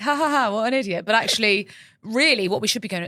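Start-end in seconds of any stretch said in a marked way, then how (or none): 0.0-1.1 high, acted laughing through the words. Retelling arriving to find a slumped groomsman: imitating own laughing. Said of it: "I'm laughing like".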